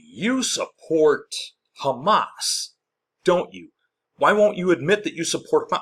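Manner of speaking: high, loud, badgering, accusing yell. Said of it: "yelling, except with a higher pitched voice".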